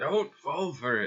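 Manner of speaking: high, slow, loud yell.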